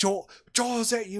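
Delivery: acted, enraged, very high-pitched furious outburst. Retelling a phone call, imitating the guy who got so mad. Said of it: "He gets so mad".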